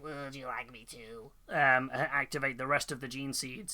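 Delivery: mechanical, robotic, machine-like voice. Retelling what a character says to Gulliman, in his robotic voice. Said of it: "in his robotic voice".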